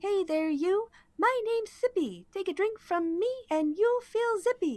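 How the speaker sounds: high robot voice. Narrating, the keg robot greets those entering the room; Sippy the keg robot voice. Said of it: "It seems to be a keg robot, / Is a wooden and metal construct, vaguely reminiscent of a dwarf wearing a horned helm, and it has a barrel for a body. It seems to be a keg robot, very stout wood metal c".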